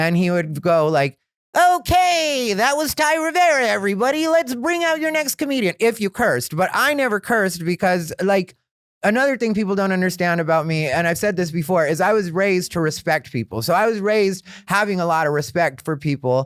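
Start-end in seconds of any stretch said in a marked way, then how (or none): 1.6-5.8 put-on very high, silly little old-timer emcee voice. Imitate a really old, old school Hollywood type bringing out the next comedian, in Harvey's silly little voice. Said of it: "he had this silly little voice like that".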